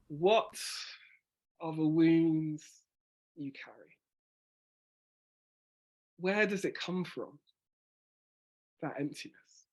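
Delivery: measured delivery, deliberate pauses between phrases, with emphasis. Doing the lines again to show pauses and emphasis, deliberate pauses and emphasis. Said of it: "by those pauses, there's an emphasis".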